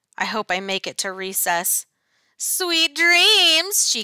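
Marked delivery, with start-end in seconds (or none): 2.4-3.9 gleeful cackling, much higher, louder. Reading a story, the monster teacher speaks to the class at nap time, cackling. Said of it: "She's really green. She has a tail. She scratches her name on the blackboard with her claws. Freddie Jones throws a spitball. She curls up her lip and breathes fire at him".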